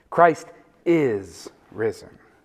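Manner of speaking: heavy emphasis on the word is. Explaining the Easter tradition, says Christ is risen with stress on is. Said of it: "put the emphasis on the is".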